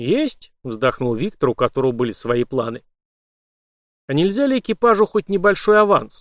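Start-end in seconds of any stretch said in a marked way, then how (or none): 4.1-6.2 fake casual, feigned indifference, pitched up. A crew member asks the captain for a small advance, with feigned indifference. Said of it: "сделанным равнодушием поинтересовался Дугин".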